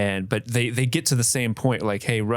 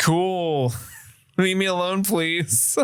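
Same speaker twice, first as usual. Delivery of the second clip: put-on bored, uninterested tone, slow and pitched up; 7 semitones higher than usual. Acting out being a woman who is not into the conversation: imitating someone not into it. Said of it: "not into it".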